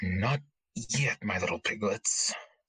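low under-the-breath mutter. A storyteller voices an escaping character heading for the river, muttering under his breath. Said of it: "under his breath he's like".

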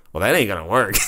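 sneering, jeering, mocking, taunting tone. Retelling how he mocked the table move, imitating his mocking voice. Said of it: "in his mocking voice".

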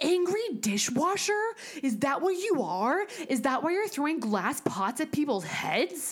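mock sudden, high-pitched accusing yell. Retelling what a ghost hunter yelled at the empty kitchen: imitating Zach yelling. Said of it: "Zach immediately yells".

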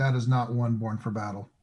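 ordinary talk

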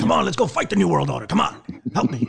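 screaming voice. Retelling how he was urged to join the fight, screaming like Alex. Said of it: "he said that screaming in typical Alex fashion".

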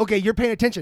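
ordinary talk

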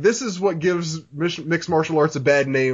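ordinary talk

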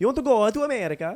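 put-on puppet-like Italian accent. Repeating the recruiter's pitch again: puppet Italian accent. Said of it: "literally a puppet Italian".

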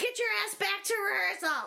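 play-acted, shrill screaming as if through a megaphone. Retelling a character on a cherry picker ordering people back: imitating someone screaming. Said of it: "running around on this cherry picker with a megaphone, screaming at people".

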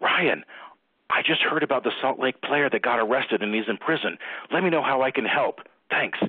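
mock-urgent, frantic, high-pitched delivery. Retelling a voicemail from the former national commissioner, imitating Jared's frantic voicemail. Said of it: "it's Jared in a frantic voice".

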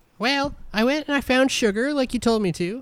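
squeaky, tiny, very high, mouse-like voice. Game master voicing Charlene answering Rufus's question, in Charlene's little mousy voice. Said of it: "you hear her little mousy voice".

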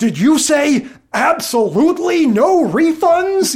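high, incredulous impression with funny delivery.

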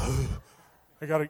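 slow, breathless panting, winded.

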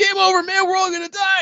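freak-out, voice shooting very high in panic. Retelling how a guy suddenly did Hudson from Aliens, a Hudson freak-out impression. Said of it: "he starts to freak out".

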